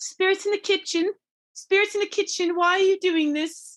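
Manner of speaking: very high-pitched put-on British accent. Retelling a TikTok woman talking to a spirit, imitating her British accent. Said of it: "With her her British accent".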